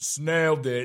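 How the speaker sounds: very loud, booming, proclaiming voice. Recounting walking out after handing in a test: retelling own booming voice. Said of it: "my booming voice when I was walking out".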